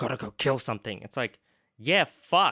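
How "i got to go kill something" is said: put-on angry voice. Describing a werewolf character in the film: imitating Jacob angry. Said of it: "he's so angry".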